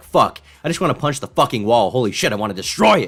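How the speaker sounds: fuming, angry, frustrated pent-up outburst. Reacting to a clip, speaker acts out a man getting a little mad. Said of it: "He gets a little mad, he's like".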